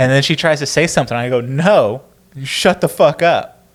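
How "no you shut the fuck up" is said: slow, seething rage, acted, pressed out word by word. Retelling stopping a comedy set to confront a talking audience member: imitating own angry outburst. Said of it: "a moment of rage where you're just like".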